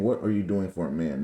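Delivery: normal talking voice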